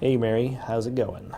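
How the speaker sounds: ordinary delivery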